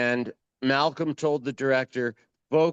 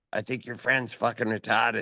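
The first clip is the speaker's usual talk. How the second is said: put-on whispered voice; 2 semitones lower than usual. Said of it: "whisper in my ear".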